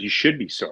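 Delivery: mock short, snapped, curt delivery. Retelling a teammate's curt reply to an apology: imitating Greg Maddux snapping. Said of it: "snapped at me".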